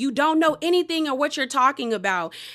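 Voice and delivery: angry, heated delivery. Retelling a quarrel, quoting Whitney's reply: imitating someone angry. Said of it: "Whitney gets angry with Lisa".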